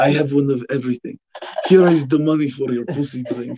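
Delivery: put-on Arabic-accented voice.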